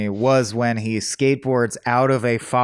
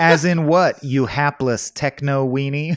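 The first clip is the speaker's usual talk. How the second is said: ordinary talk, nothing marked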